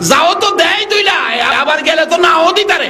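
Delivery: projected call.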